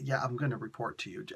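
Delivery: muttered under breath. Recounting how the other captain answered, retelling a mutter under breath. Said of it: "under his breath".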